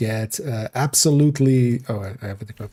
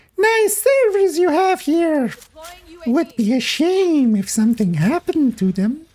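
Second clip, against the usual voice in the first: creepy, very high, put-on unplaceable accent. Trying out an accent they can't place, saying it in a creepy put-on voice. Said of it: "I always love going creepy with that voice".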